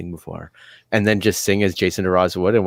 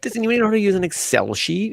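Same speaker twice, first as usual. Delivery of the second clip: put-on very high baby voice; 13 semitones higher than usual. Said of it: "talks in the baby voice".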